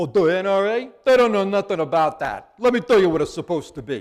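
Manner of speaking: loud, heavy New York mob-boss accent. Showing how not to answer a question about the videos, Tony Soprano impersonation. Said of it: "best Tony Soprano impersonation you've got".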